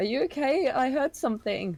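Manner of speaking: put-on teenage shout, very high-pitched and loud. Playing a girl who shouts out a question: shouting in a teenager voice. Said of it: "I'm gonna have to do my best teenager impression".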